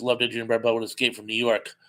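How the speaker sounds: normal talking voice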